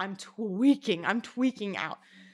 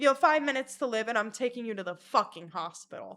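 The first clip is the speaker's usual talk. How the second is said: ordinary delivery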